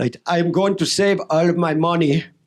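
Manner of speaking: put-on Austrian accent. Retelling a story of early money saving: imitating Arnold Schwarzenegger's accent. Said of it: "I can't do the accent. Can I do the accent?".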